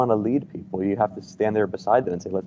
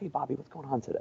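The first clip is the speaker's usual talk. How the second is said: very quiet, toned-down, slightly lifted soft voice; 6 semitones higher, 12 dB quieter than usual. Demonstrating how to de-escalate with a seated child, speaking in a lowered voice. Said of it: "Lower your voice in a different tone".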